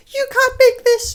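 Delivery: very high, mock whiny executive voice. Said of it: "they would have been like".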